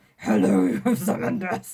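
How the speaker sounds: huge, angry growling voice. Showing how Pinhead sounds in the movies, unlike the book, do an angry, masculine Pinhead voice. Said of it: "the most grrr, angry, masculine voice".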